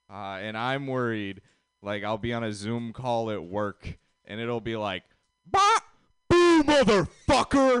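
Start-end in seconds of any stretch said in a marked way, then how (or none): 5.4-7.8 bad, shrill, high, loud put-on yelling voice. Joking that a pet parrot repeats a joke at work: bad Samuel L. Jackson impression. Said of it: "a really bad Sam Jackson impression".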